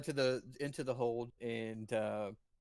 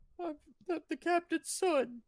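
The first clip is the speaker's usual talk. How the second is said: put-on young small boy voice, higher. Voicing a small boy saying who he is: small boy voice. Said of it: "a small bronze dragonborn boy, probably about eight years old".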